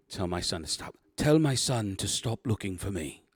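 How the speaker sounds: put-on British accent. Describing a scene, quoting a man who just stopped screaming, in a British accent. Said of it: "In a British accent".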